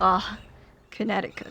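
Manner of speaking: put-on scorn. Saying a place name again after deciding on more disdain: mock disdain. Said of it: "we have to say it with more disdain".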